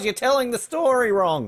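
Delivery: put-on yelling. Joking about a mother yelling in the background: imitating someone yelling. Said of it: "she was just yelling and going".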